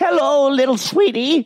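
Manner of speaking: put-on very high, sweet little granny voice. Speaker demonstrating stock character voices: grandma voice. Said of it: "it's my grandma voice".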